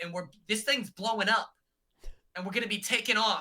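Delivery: imitated, put-on Boston accent. Retelling how Tucker read into the competitions: Tucker accent. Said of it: "here's my Tucker accent".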